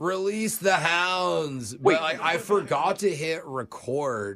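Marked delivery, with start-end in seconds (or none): 0.0-1.7 theatrical, grandiose, dramatic, pitched-up delivery. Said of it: "It was like".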